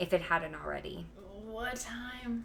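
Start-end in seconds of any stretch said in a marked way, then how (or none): 1.4-2.4 groggy, slurring the words, pitched up. Narrator reading the line of a woman told to rest, slurred speech. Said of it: "Della slurred".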